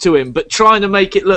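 ordinary delivery, nothing marked

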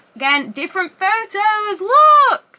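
giddy, excited, high, loud gushing, "look" drawn out. Showing off a CD's lyric booklet, freaking out with excitement. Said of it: "I'm like proper freaking out over this".

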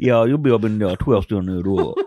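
put-on New Orleans accent. Joking along in a bit about twisting it up: put-on New Orleans accent. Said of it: "it's a New Orleans accent".

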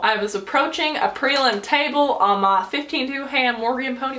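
gradually sliding into American Southern accent. Answering question 34 about a worst riding fall, southern accent. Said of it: "Why am I talking in Southern accent?".

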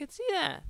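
voice crack. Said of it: "Did my voice just crack".

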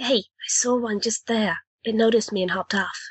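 secretive, confiding tone. Speaking in character to the others: hushed tone. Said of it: "says in a hushed tone to the others".

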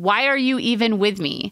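ordinary talk, nothing marked

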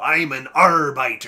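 loud, put-on, seafaring pirate accent. Joking about a name for lawyers, in a put-on pirate accent. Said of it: "I want to say it with a pirate accent".

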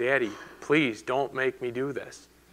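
put-on pleading tone. Retelling how he prayed to his Father in anguish, acting out the plea. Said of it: "And he pleaded".

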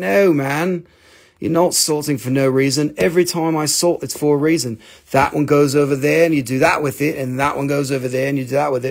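ordinary delivery

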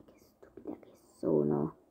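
soft, self-scolding whisper.

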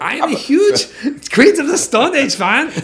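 put-on German accent. Imitating a fan in a German accent. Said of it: "I would do it in a German accent".

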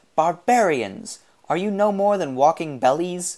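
shrill, high-pitched outcry. Box answers people asking him for food, shrilling at them. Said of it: "shrilled Box".

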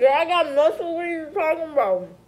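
loud, high, talking around a mouthful of food. Replying in an argument, talking with mouth full. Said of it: "Why are you talking with food in your mouth".

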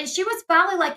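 ordinary talk

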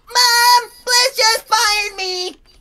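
very high, loud cartoon voice, pitched way up, called out. Telling Mom about being fired by Bliss, Eric Cartman voice. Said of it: "you sounded like frickin' Eric Cartman".

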